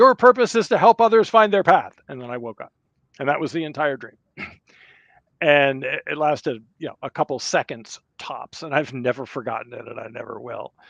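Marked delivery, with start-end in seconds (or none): 0.0-1.9 resounding, booming, very loud voice. Retelling a dream, the speaker quotes a voice heard in the dark: booming voice. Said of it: "I hear a booming voice say".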